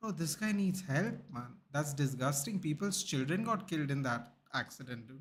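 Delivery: ordinary talk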